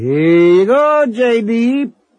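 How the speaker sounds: gleeful, relishing yell, very high, very slow, drawn-out. A brother tossing the narrator off a diving board into the swimming hole, yelling. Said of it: "Sven yelled".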